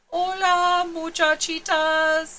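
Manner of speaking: very soft, gentle, hushed voice. A narrator reads the kitty boy greeting the little girls; very soft voice. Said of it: "he said in a muy, muy soft voice".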